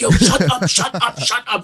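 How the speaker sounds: embarrassed, urgent shushing. Retelling telling a loud teammate to be quiet: retelling own embarrassed hushing. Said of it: "embarrassed telling him".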